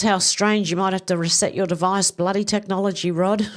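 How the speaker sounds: ordinary talk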